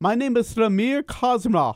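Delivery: Indian accent, done for show. Guest from India, asked whether his character has an accent, introduces him in an Indian accent. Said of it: "I could do an accent".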